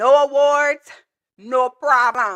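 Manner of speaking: bad put-on Jamaican accent, drawn out, very slow. Telling viewers about a TikTok title, the speaker reads it in a terrible Jamaican accent. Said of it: "That's my that's my terrible Jamaican accent".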